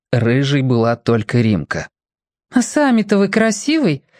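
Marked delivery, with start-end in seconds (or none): 2.5-4.0 snide, caustic, needling tone, pitched up. Narrator reads the red-haired girl's reply to a greeting, caustic. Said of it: "язвительно спросила она".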